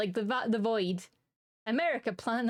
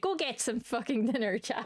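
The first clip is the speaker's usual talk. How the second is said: put-on angry mother voice, slower. Streamer telling chat to go get dinner, in an angry mum voice. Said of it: "I'm using my angry mum voice".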